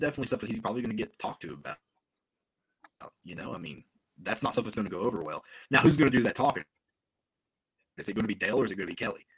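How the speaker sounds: sped-up, rushed, robot-like fast-forward speech. Speaker wonders aloud who will do the talking, talking very fast. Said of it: "You sound like you're talking in fast forward".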